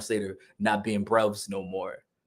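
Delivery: normal talking voice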